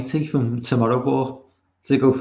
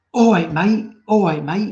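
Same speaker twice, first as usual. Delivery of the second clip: put-on pitched-up Cockney gangster accent; 6 semitones higher, 4 dB louder than usual. Repeating how the listener imitates them, in a Cockney gangster accent. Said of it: "Like like I'm some sort of like Cockney gangster".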